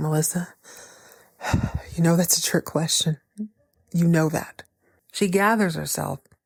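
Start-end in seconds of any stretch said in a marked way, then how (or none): 0.0-4.6 put-on nervous, funny breathing. Retelling a tense scene where he answers melissa: imitating someone breathing funny. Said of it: "He starts breathing funny".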